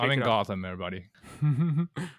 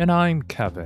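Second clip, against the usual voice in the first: public-radio announcer voice, much slower; 2 semitones higher than usual. A podcast co-host introduces himself, in NPR announcer style. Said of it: "You said that like you're an NPR".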